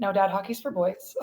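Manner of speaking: ordinary talk, nothing marked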